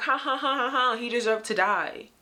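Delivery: put-on taunting, scornful ha-ha laughter. Imitating people in TikTok videos mocking a murder: mocking laughter. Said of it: "being like".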